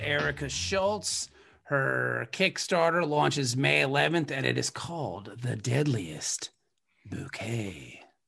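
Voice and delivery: deep, big movie-trailer announcer voiceover voice. Host announcing a guest's kickstarter launch, movie-trailer announcer voice. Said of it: "You had a very announcer voice on that".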